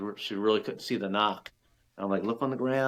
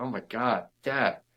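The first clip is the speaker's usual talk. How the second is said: put-on giggling girl's voice, stretched out very slow. Retelling a girl's reaction, calling to her dad: imitating a giggling girl. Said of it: "she's all giggling".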